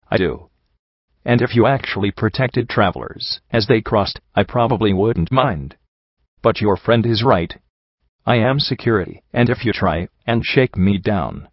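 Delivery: ordinary delivery, nothing marked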